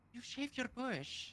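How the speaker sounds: disappointed. Asked during an acting game to say the line in a disappointed voice: disappointed. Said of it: "Say you shaved your puss in a disappointed voice".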